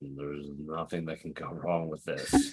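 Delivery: low muttering under the breath. Voicing a character named Lord in a game scene: muttering under his breath. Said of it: "Lord mutters under his breath".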